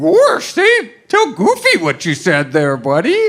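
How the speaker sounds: high, loud, swooping, sing-song cartoon voice. Voicing a second puppet to get someone to repeat himself, as Goofy. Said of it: "I'm like Goofy here".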